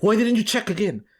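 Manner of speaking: mock yelling, high-pitched and accusing. Speaker retells a lady next to them yelling after a turn: imitating a yelling lady. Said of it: "this lady starts yelling at me".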